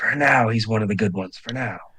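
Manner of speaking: low, hushed, half-whispered aside. Voicing a character, the speaker has him half-whisper to Saris. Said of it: "he whispers".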